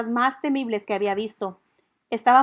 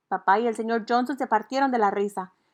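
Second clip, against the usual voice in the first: ordinary delivery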